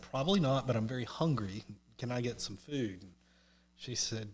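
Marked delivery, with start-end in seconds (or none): none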